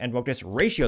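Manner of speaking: ordinary talk, nothing marked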